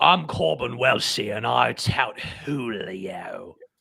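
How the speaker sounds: very slow put-on British accent, syllables savored. Asked to say the word Julio in a British accent, British accent. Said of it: "please say the word Julio in a British accent".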